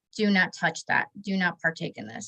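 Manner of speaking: put-on very stern tone. Recalling a voice heard in church at communion, imitating a very stern voice. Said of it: "very stern voice saying".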